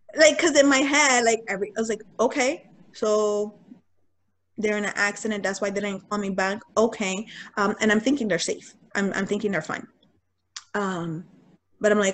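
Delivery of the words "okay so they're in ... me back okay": ordinary talk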